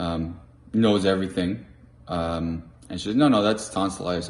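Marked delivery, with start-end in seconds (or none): none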